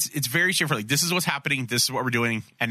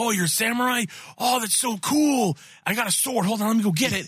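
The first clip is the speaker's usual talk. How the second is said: put-on happy voice, much higher pitch; 9 semitones higher than usual. Describing a show's episode, the speaker acts out the character Bobby: mock-happy Bobby impression. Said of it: "he's so happy".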